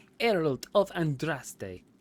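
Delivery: terrible, clumsy put-on French accent. Playing a game, the speaker repeats a character's greeting, bad French accent as Mother Giselle. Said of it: "that was such a terrible accent".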